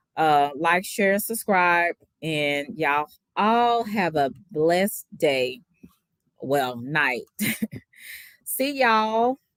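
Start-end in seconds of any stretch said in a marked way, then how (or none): 8.5-9.4 put-on Texas accent, pitched up. Signing off to viewers at the end of a video, in a Texas accent. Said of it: "in my Texas accent".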